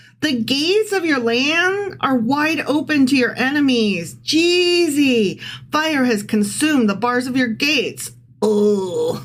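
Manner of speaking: high, sarcastic, mocking taunting voice. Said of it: "It's sarcasm".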